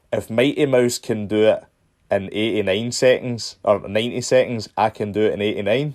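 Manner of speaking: normal talking voice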